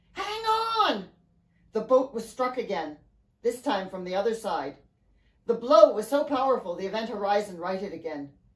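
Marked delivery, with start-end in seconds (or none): 0.2-1.1 shrill, very high shriek. Narrator reads Mary calling out as the boat is struck, screaming. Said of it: "Mary screamed".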